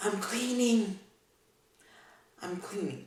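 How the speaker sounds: gentle, soft, hushed stage whisper murmur. Retelling how Sheldon answered Leonard, retelling Sheldon's soft half-whisper. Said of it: "in a soft, whispering voice".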